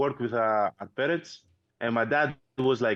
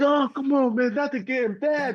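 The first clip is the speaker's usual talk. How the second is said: put-on crying complaint, higher pitch; 13 semitones higher, 3 dB louder than usual. Retelling younger brothers' reaction when food was taken: imitating brothers crying. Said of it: "we started crying, like".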